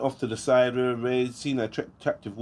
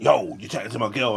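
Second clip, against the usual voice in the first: mock defensive, confrontational tone; 2 semitones lower than usual. Describing confronting a guy who talks to your girl: imitating a defensive guy. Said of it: "all that defensiveness".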